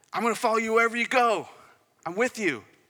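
play-acted, very high-pitched, eager, excited gushing. Retelling a man's eager words to Jesus, acting out excited follower. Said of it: "he's all excited".

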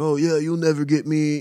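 cocky, swaggering know-it-all bragging tone. Imitating the drum tech playing the cocky guy: imitating a cocky guy. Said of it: "playing the cocky guy that's like".

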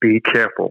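mock firm, very stern, grave, dead-serious delivery. Retelling a parent's warning before a first trip south: imitating dad speaking sternly. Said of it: "my dad just very sternly".

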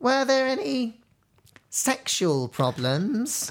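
very slow, high pitch, pause mid-line. Imitating a woman asking a question, with a pause before sexual problems. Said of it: "I'll try and do it in exactly the voice that she does it. ... it's the pause".

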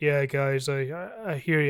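very low, deep, slow, drawn-out delivery. Imagining what the actor would reply on the show: imitating Vin Diesel. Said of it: "And he'd be like".

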